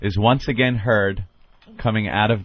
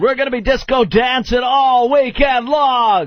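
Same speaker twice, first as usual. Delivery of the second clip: very high, mid-seventies radio DJ patter voice; 3 dB louder than usual. Mocking a radio dj on the air: imitating a mid-seventies radio jock. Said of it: "He sounds like a jock from".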